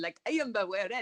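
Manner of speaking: put-on mock Italian-sounding accent. Mimicking how an adaptation pronounced a name from the book, Italian-sounding accent. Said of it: "sound sort of like Italian".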